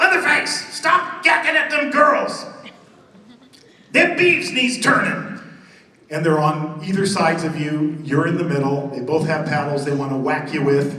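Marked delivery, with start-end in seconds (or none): 0.0-5.4 high, slow mock yell in old man voice. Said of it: "the old man is yelling at Leatherface".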